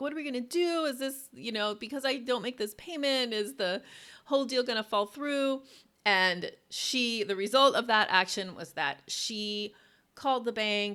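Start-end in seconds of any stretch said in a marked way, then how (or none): 0.0-5.6 mock weepy, high, tearful crying voice. Retelling a call to the real estate agent: imitating own past crying. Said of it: "I called my real estate agent crying".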